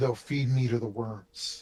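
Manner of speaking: faint, hushed, barely audible whisper. Voicing a character who whispers back a reply through a spell, faint whisper. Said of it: "And he whispers back and he says".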